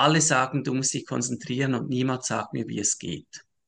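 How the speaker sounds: normal talking voice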